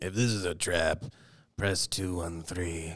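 put-on scary character voice. Retelling a scene with a floor-button code, imitating Luthen's scary voice. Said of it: "you hear Luthen's you know scary voice".

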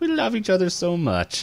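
lifted, high-pitched little voice. Retelling a cartoon scene where a character writes a letter: high voice. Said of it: "in a high voice".

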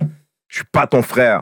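play-acted, high, irate, angry police officer voice. Retelling a police officer's reply after being called brother, mock-angry cop. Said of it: "tu es fâché parce que j'ai dit, mon frère".

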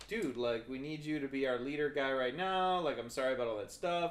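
ordinary delivery

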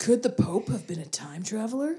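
ominous, menacing mystery-show documentary narrator voice. Imitating the Ancient Aliens narrator after being told to sound menacing: menacing Ancient Aliens narrator voice.

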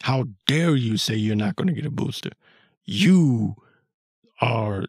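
mock condescending, belittling dressing-down. Retelling how an expert answered the host: imitating a belittling scold. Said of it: "belittled him".

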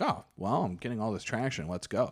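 plain

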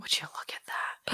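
very soft, breathy, barely voiced whisper. Retelling a line said to the camera: imitating a whisper. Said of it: "He whispers it".

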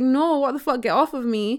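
ordinary talk

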